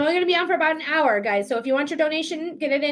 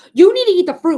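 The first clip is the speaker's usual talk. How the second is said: very loud, stern, angry voice; 3 semitones higher, 10 dB louder than usual. Repeating what the man who passes on his leftover fruit said, mock-angry. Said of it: "he said it to me angrily too".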